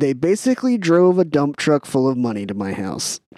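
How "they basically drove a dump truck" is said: usual speaking voice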